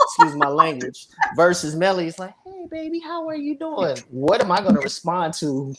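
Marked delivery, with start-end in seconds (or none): 2.4-4.0 put-on very high, nicer-sounding, pleasing, girly woman's voice. A man contrasts two women's greetings, voicing the second: imitating Melly's voice. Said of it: "the woman that ... sounds better than me".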